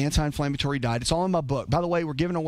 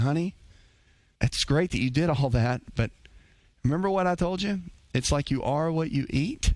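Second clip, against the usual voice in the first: gentle, sweet little grandmotherly voice. Recalling a grandmother's advice: imitating granny's sweet little voice. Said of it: "Sweet little voice".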